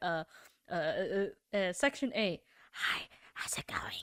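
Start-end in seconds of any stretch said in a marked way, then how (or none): 2.7-4.0 put-on gremlin voice, much lower, quieter, faster. Showing how he would annoy someone by getting close to the mic, gremlin voice. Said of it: "your gremlin voice".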